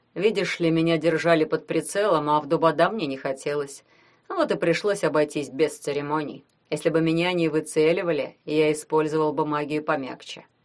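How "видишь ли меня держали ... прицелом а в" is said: ordinary delivery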